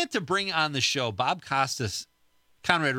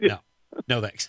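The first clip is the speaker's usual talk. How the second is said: put-on deadpan character voice, pitched much lower; 3 semitones lower than usual. Acting out a man on a flight answering a woman's offer of something to read, deadpan Puddy imitation. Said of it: "He just had such a great deadpan".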